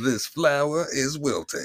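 clumsy put-on British accent. Doing an impression of Andy, in a bad British accent. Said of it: "I can't do a British accent".

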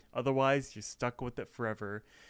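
ordinary delivery

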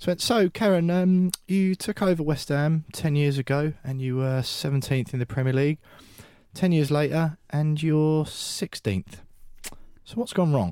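bone-dry, flat, level deadpan with no inflection. Retelling a presenter's question to Karen, in an Ian King deadpan impression. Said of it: "deadpan as you like".

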